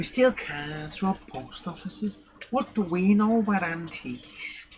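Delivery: put-on slow, drawling broad-comedy Scouse accent. Quoting a comedy sketch in a put-on Liverpudlian accent. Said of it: "trying to do that Harry Enfield Scousers joke".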